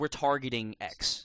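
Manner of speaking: ordinary talk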